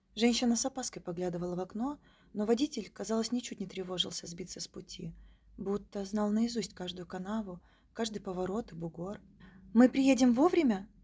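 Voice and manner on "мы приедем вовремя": anxious, worried, very loud. Narrator reads a woman passenger asking the taxi driver during a snowstorm, asking worriedly. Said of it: "с беспокойством спросила дама".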